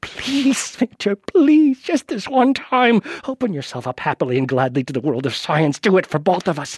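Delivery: put-on pleading, almost in tears. Retelling his biopsy, the narrator re-enacts pleading with his own body, retelling desperate begging. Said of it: "I am begging like I've never begged before".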